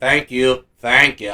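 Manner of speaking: put-on loud Texas accent. Retelling a man thanking everyone from the podium, imitating a Texas accent. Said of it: "in his Texas accent".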